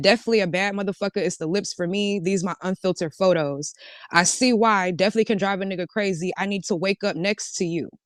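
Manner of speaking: normal talking voice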